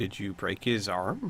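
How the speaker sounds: dead calm, very soft, low, hushed voice. A narrator voices a character looking back at the others, very calm. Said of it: "very calmly look back at the others and say".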